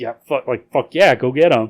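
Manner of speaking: usual speaking voice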